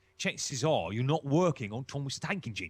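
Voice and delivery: thick, broad East London accent. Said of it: "you talk like this".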